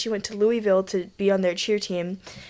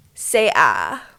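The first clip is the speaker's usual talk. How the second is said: put-on low, creaky, sassy vocal fry; 6 semitones lower, 3 dB louder than usual. Acting out a friend as an orthodontist in a made-up scenario, put-on sassy vocal fry. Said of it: "sassy like vocal fry type of voice".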